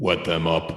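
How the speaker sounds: deadpan, flat, dead monotone with no inflection. Saying wet them up to sign off, flat monotone. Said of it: "in the most monotone voice that I can".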